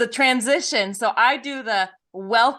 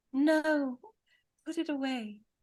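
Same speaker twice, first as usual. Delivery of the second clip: very quiet, high, whispery put-on British accent; 5 semitones higher, 9 dB quieter than usual. Describing the little angel that pops onto your shoulder, in her british voice. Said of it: "in her British voice".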